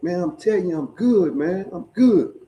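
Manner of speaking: put-on drunken voice. Retelling an exchange with Sal, the speaker imitates Sal's drunk voice. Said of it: "he's saying in that motherfucking drunk voice".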